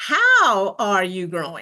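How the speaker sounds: "how" stressed, leaned on and hit first. Talking about self-improvement, the speaker puts stress on the word how. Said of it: "The emphasis is on the word how".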